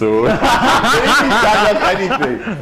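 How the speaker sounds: slow, high-pitched laughing through the words.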